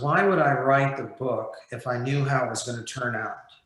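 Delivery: ordinary talk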